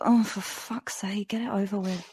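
muttered in exasperation.

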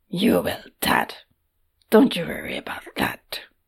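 grudging, gruff, rough-edged tone. A man reassures his father about what lies ahead, gruff and almost reluctant. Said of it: "Nadek's uncle said gruffly".

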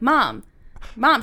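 normal talking voice

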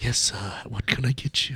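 put-on whispering waiter. Retelling how a waiter at the movie theater takes orders: imitating a waiter whispering. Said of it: "he walks into the movie theater and he whispers to you".

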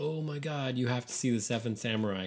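plain

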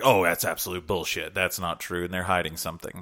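usual speaking voice

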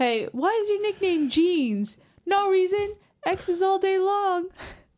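mock teasing voice, high, slow, stretched out.

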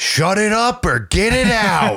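put-on very high, drawn-out old man's yell. Retelling a comedian's bit where an old man in a theater yells: imitating an old man yelling. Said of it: "this old man from down in the front row just yells".

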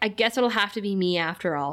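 ordinary talk

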